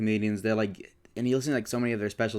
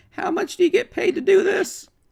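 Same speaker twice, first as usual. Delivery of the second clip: very high, very loud, squealing cartoon voice; 9 dB louder than usual. Speaker retells a man calling a church prayer hotline: Morty voice. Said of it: "in Morty's voice from Rick and Morty".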